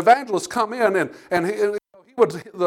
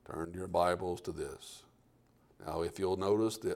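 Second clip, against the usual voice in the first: low, flat, unvarying droning preacher monotone; 17 dB quieter than usual. Recalling a preacher once watched, the speaker imitates his monotone preacher voice. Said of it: "It was monotone the whole time".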